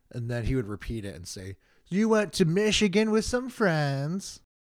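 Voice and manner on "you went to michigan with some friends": raised, patronizing, condescending, talking-down voice. Retelling how a comedian repeated their words: imitating a condescending repeat. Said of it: "repeats everything that I'm saying in a real, you know, condescending manner".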